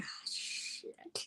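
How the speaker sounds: soft, breathless, dismayed whisper under the breath.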